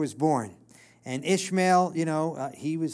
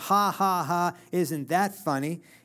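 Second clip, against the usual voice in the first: mock derisive, slow, taunting ha-ha-ha laugh. Retelling the story of the angel and Abraham, imitating her mocking laugh. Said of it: "It was a mocking laugh".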